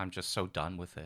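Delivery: very soft, quiet, contemptuous, full of scorn. Talking about a TV series they are done with, contemptuous. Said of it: "the level of contempt in my voice".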